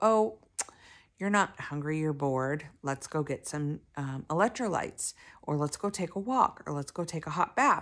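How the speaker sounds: ordinary delivery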